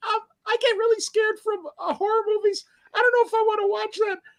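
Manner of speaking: tiny, very high, squeaky little voice. Retelling a scared little girl's words: imitating a squeaky little voice. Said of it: "this tiny little thing with this squeaky voice".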